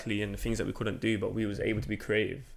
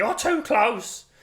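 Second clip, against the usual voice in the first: put-on shrill elderly lady yelling, very high, loud; 13 semitones higher, 8 dB louder than usual. Retelling how an elderly lady on the street shouted: imitating an old lady shouting. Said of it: "Just shouted out".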